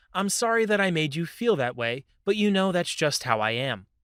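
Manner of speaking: ordinary talk, nothing marked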